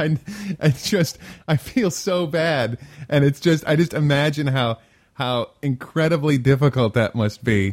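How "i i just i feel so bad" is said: slow talk, words broken up by laughing. Reacting to a story about baby furs: laughing while talking. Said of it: "I don't mean to laugh".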